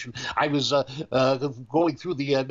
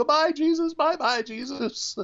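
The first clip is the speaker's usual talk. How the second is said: put-on sobbing child voice, higher pitch; 13 semitones higher than usual. Retelling a child crying out a goodbye: imitating a crying child. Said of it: "the child was just crying, going".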